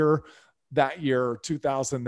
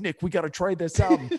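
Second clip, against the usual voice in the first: put-on Southside Chicago accent, pitched up; 5 semitones higher than usual. Retelling what his buddy said to him, in Frank Avino's Southside Chicago accent. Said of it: "So he had that accent".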